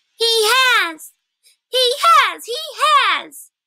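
very high, squeaky little squirrel voice. Narrator voicing a young squirrel at the table who loses its head, squeaking. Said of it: "it squeaked".

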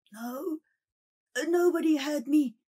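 breathless, out-of-breath voice. A man who ran to the soba seller answers whether anyone hurt him: panting. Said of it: "panted the other".

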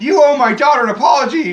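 whiny, very high, loud voice. Acting out an imagined scene, all whiny: whiny Anakin Skywalker impression. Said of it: "all whiny and shit".

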